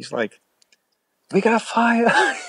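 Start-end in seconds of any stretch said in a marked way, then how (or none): 1.3-2.4 piercing, very high scream. Telling of a guy at the front of the store; retelling a man's scream. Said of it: "he's screaming".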